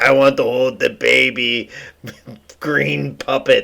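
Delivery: put-on weird nihilistic European voice. Mocking a weird, nihilistic European guy: Werner Herzog impression. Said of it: "He's like".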